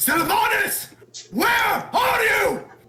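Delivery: shrill, all-out, very high screaming call. Acting out a character calling out for Sylvanas: screaming. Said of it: "I'm screaming".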